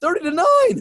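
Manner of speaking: incredulous voice leaping to a very high pitch. Speaker recounting a team's score, voice jumping up in pitch. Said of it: "my voice went up a couple octaves there".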